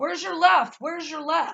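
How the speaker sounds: mock loud, high, booming shout. Retelling a man yelling at a child in a red stroller, booming voice. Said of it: "he was talking like a booming voice".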